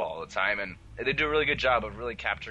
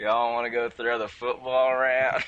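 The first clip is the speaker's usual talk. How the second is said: southern drawl, close to whining; 3 semitones higher, 5 dB louder than usual. Two hosts discussing the drawl; one tries a Matt Saracen southern drawl. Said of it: "It's really fun to talk like that".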